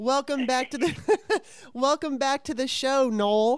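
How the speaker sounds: high, giggling, laughing stumble through a restart. Host welcoming a returning guest back to the show, laughing while talking. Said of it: "I am sorry I'm laughing".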